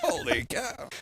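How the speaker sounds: breathy, hushed, half-whispered, breathed out. Reacting to ticket prices with a Harry Caray impression. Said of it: "his worst Harry Carey impression ever done".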